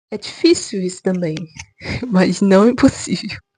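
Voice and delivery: nervous laughter through the words. Admitting the change is hard, laughing nervously while talking. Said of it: "E eu tô rindo, mas rindo de nervoso".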